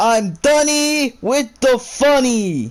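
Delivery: very high, drawn-out scream at loudest possible volume. Practicing a joke's closing catchphrase, declared in the loudest possible voice. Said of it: "declaring in your loudest possible voice".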